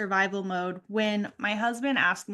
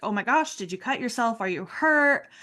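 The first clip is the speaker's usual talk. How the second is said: put-on frantic, alarmed, worried voice. Recounting sobbing over dropped soup, the speaker quotes her husband rushing in; imitating a frantic husband. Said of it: "my husband came in frantic".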